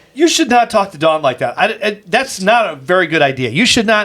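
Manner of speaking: normal talking voice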